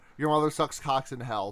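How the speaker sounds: ordinary delivery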